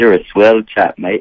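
fake, put-on British English accent. On the program, teasing a guest he calls his old pal: mock English accent. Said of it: "we're back to the English accent".

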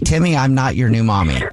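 normal talking voice

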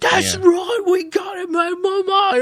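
put-on West London accent, high pitch. Imitating a film character who thinks he's a badass: West London accent imitating Sean Bean. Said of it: "throws his, like, English accent to make it seem like he's kinda, like, from, uh, West London".

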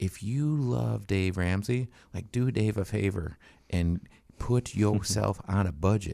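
put-on tried Tennessee accent. Retelling what he told a man with no budget, in a tennessee accent. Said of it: "was that your attempt at a Tennessee accent there?".

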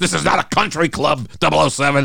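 high-pitched, play-acted stern yell. Recounting a film scene where a resigning agent gets yelled at, retelling a yell. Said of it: "M yells at him and says".

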